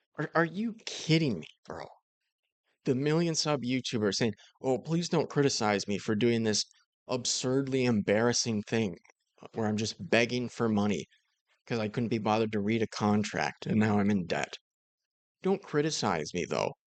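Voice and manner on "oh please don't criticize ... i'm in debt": ordinary talk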